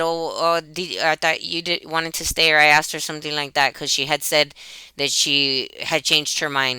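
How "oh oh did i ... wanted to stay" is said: normal talking voice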